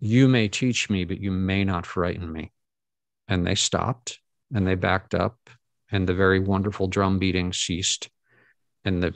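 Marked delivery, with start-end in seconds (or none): none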